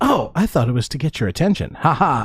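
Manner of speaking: ordinary talk, nothing marked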